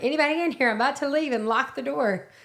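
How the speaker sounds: acted-out high-pitched calling shout. Speaker retells calling out before leaving and locking the door, retelling a shout. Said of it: "and I think I shouted".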